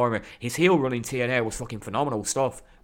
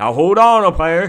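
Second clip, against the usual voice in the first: bad, very loud, pitched-up belted call; 6 semitones higher, 11 dB louder than usual. Retelling a wrestling moment, quoting the general manager: worst Teddy Long impression. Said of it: "the worst impression ever".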